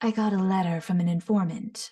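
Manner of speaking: sultry, husky, low, sharp, precisely enunciated delivery. Showing how a character speaks: husky lower-toned Yelan voice. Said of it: "huskier, lower toned voice".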